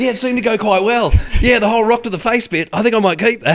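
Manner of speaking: very high-pitched, loud voice. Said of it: "the crocodile hunter becomes [name]".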